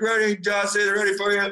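loud high-pitched yell.

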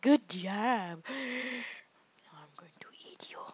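unhinged, crazy cat lady voice. Talking to the cat, crazy cat woman voice. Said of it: "Sound like that crazy cat woman".

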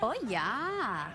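fake Swedish accent with drawn-out "yeah". Asked to speak a little German, answering in a put-on accent sounding Swedish. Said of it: "That's Swedish".

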